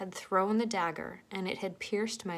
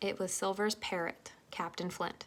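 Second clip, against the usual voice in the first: plain reading voice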